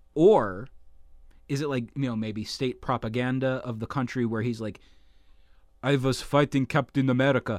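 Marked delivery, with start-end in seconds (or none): 5.8-7.5 put-on Russian-accented English, done for laughs. Imagining a rival boasting about fighting captain america, in a put-on russian accent. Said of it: "I'm sorry for all our Russian listeners out there for me doing that voice".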